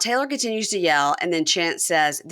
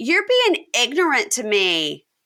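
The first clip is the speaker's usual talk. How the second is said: play-acted, slow, drawn-out yell at half strength; 4 semitones higher than usual. Retelling what Taylor yelled from the side: imitating someone yelling. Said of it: "she yells".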